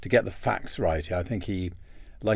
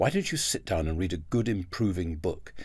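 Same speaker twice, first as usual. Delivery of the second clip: rather exasperated, nagging tone, put-on exasperation. Recalling childhood, the speaker quotes their mother: imitating exasperated mother. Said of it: "in a rather exasperated tone".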